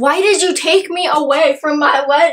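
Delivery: put-on irate, accusing, pissed-off angry tone. Retelling a book scene where the heroine confronts her rescuer: imitating an angry character. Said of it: "she's, like, all pissed, like".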